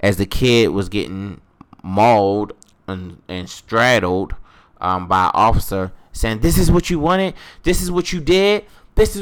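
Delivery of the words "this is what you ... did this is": mock enraged shouting, very high-pitched, furious. Retelling a coworker in a video yelling at another woman: imitating a furious yell.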